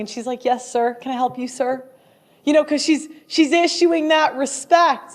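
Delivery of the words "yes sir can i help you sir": soft, sweet, charming, deferential Southern belle voice. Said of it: "that Southern belle ... very sweet and charming".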